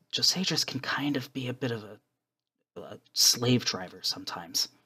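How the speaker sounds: soft, confiding, leaning-in whisper. Voicing a character who leans in, whispering. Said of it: "he kind of leans in and whispers".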